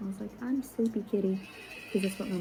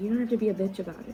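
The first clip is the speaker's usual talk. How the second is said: acted, all-mad, angry, scolding mom voice. Retelling how a mom got mad: imitating an angry mom. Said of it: "she got all mad with me".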